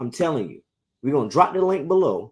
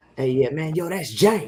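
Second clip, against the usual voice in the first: put-on Virginia local accent. Speaker recalls going up to Richmond and Norfolk, imitating Richmond and Norfolk locals. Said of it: "them Richmond parts of V A and Norfolk, they be like".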